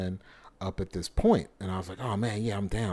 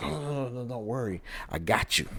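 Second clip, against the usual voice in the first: mock drunk man speech, higher; 4 semitones higher than usual. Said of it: "this drunk, um, local national comes".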